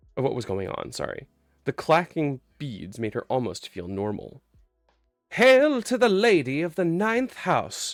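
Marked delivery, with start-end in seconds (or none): 5.3-7.9 high, delighted, warbling cry. A voice calls out on seeing Harrow, warbling delightedly. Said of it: "warbled a voice delightedly".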